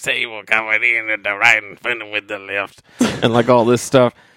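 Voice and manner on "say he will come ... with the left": put-on gravelly, rough voice. Describing a character's dialogue from a show, imitating a gravelly voice. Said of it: "he's just got this gravelly voice".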